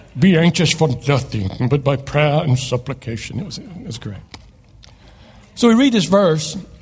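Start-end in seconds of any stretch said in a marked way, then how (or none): 0.1-3.3 deep, solemn, put-on British accent. Speaking with head over the toilet so it echoes, British accent. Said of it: "I spoke with a British accent".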